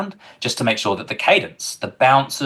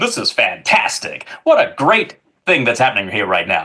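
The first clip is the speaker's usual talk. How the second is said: exaggerated, swooping, over-the-top American hype announcer. Recounting a scene shot on set, playing an over-the-top American announcer. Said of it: "over the top, uh, kind of just like American an- announcer person going".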